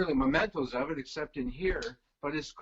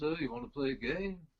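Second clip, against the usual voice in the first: bad put-on English accent; 3 dB quieter than usual. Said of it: "pardon my terrible accent".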